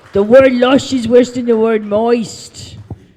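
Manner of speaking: jokey put-on British accent, loud and high. Making fun of the British guy, in a mocking British accent. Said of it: "That's my British accent".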